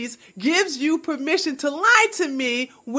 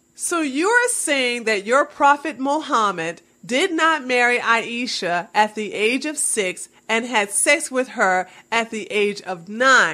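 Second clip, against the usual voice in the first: plain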